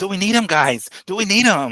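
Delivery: high, swooping voice, rising at the end. Imitating a boxing promoter's question: Oscar De La Hoya impression, rising at end. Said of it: "high at the very end".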